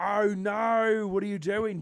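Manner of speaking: put-on Australian accent, very high and loud. Showing the other speaker how easy it is, in an australian accent. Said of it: "You just go".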